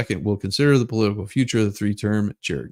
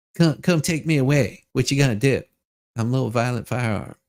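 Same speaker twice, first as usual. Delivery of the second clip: smiling, grinning put-on character voice. Acting out a firearm walking down the street: smiling while talking as a firearm. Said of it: "He's got a big smile on his face going".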